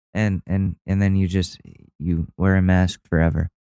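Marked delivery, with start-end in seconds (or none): none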